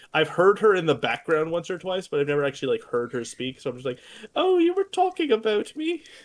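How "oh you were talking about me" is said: put-on very high, slow, granny-like old-lady voice. Giving the listener's mom a made-up voice, in a fake Mrs. Doubtfire voice. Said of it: "I'm giving your mom a fake voice".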